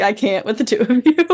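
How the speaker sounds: ordinary talk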